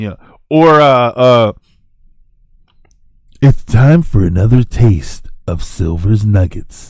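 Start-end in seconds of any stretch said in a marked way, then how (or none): 3.4-6.9 deep, low put-on voice. Trying out an intro line for a segment: deep voice. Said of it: "some, like, deep voice".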